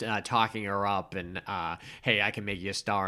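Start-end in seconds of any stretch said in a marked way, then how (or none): none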